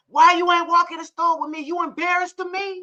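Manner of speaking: mock calling out loudly, meant to carry. Retelling how he calls out to her in the car: imitating him calling out loudly. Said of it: "and his voice carries".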